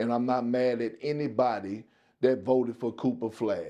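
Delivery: normal talking voice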